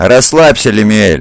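said with a smirk. Ariman answers the pleading Lemiel, smirking. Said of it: "усмехнулся Ариман".

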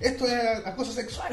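put-on high, slow, stretched-out yell. Recounting a meme, the speaker acts out a person's outburst, retelling a yell. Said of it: "y empieza a gritar".

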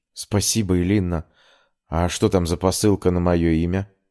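ordinary talk

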